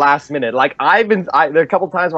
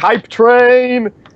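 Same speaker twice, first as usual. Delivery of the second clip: playful, goofy put-on voice, pitched up high; 9 semitones higher, 3 dB louder than usual. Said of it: "he has a really funny Prescott impression".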